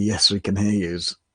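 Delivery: ordinary talk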